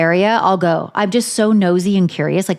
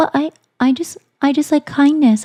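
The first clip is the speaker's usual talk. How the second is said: put-on small, high baby voice; 7 semitones higher than usual. Impersonating how someone talks, small babyish voice. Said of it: "Let me try to impersonate it. ... she does that little like baby voice".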